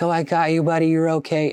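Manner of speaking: fake affectionate soothing tone. Retelling a movie scene of a man comforting a kid: imitating fake affectionate comforting. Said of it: "he's acting like he loves the little kid".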